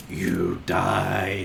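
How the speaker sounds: very low, rough, hushed growl, "died" drawn out. Voicing the voice a character hears in his head after dying: growling deep voice. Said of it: "growling, deep voice in your head going".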